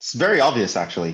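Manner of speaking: sarcastic, ironic, knowing, tongue in cheek. Telling the class what an infinite sum adds up to: sarcastic. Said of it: "I'm being sarcastic".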